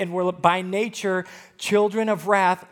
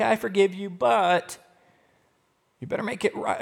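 acted, mock grudging forgiving tone. A speaker on forgiveness acts out a withholder, in mock grudging forgiveness. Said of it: "pseudo false forgiveness where you're like".

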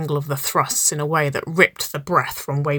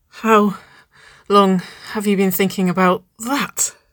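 breathless murmur, higher; 5 semitones higher than usual. A woman asks Nicole, pressed close behind her, a question in a breathless murmur. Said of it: "she murmured breathlessly".

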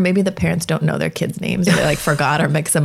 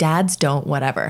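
usual speaking voice

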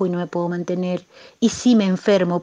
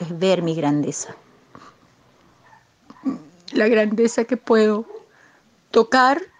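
tearful, crying and moved; 2 semitones higher than usual. Speaking to Julio about her fear, moved to tears. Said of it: "esto me conmueve".

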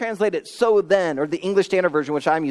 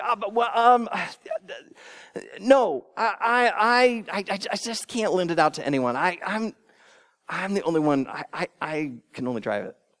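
mock stuttering, hemming and hawing, much slower; 4 dB quieter than usual. Retelling how a man refused to lend it out, imitating someone stammering. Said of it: "he hemmed and hawed, and he stuttered".

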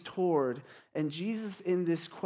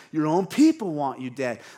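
very loud, mean, mock-defensive sarcasm; 2 semitones lower, 8 dB louder than usual. Describing Pilate's reply to Jesus and acting it out, mock-sarcastic, mean Pilate. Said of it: "he's defensive, he's sarcastic, he's mean".

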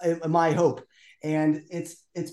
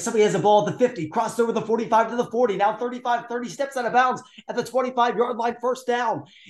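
rapid-fire, fast, high-pitched sportscaster play-by-play call; 6 semitones higher than usual. Showing how a favorite announcer calls football quickly: fast play-by-play call. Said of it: "he's so fast with his calls".

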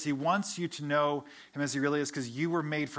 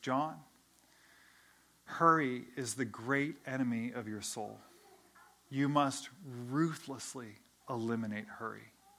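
unhurried, very calm, slow delivery; 3 semitones lower, 4 dB quieter than usual. Retelling an answer given on a phone call after a long pause: imitating Dallas speaking calmly. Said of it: "he says very calmly".

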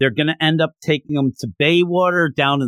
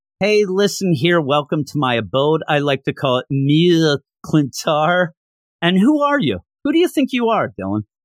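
ordinary talk, nothing marked

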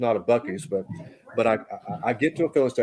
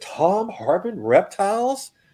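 booming, loud, very high-pitched call-out; 10 semitones higher, 4 dB louder than usual. Retelling how a man in line behind him called out his name: retelling a loud call. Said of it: "in the loud voice".

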